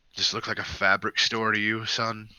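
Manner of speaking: soft-spoken, low-key voice. Voicing the bartender answering a patron who asks about ribbons: voicing the bartender. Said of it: "He kinda looks up and, ... and he's just like".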